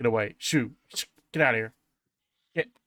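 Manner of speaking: quick reptilian creature voice, words rattled off. A game master voices a creature speaking through a door slot: reptile voice. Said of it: "you hear that reptile voice just start in Sylvan saying".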